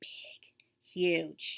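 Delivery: big, huge said in whisper.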